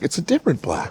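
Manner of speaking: put-on wowed reaction, impressed and surprised. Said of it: "The auditory is like".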